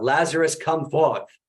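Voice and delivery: put-on strong British accent, shouted out loudly. Retelling a film scene, shouting out in a very British accent. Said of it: "shouts out in a very British accent".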